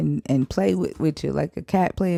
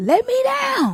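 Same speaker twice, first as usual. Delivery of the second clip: very high, acted indignant delivery with full conviction; 4 dB louder than usual. Told to say it the way she said it, deliver the words mock-indignant, with conviction. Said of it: "say it with some conviction ... You gotta be indignant. You gotta say it the way she said it".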